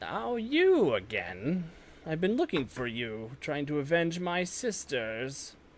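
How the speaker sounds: put-on furious, enraged old hag voice, swooping and taunting. Voicing a hag who stares down at a foe: enraged hag voice. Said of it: "stares down at you with rage in her eyes".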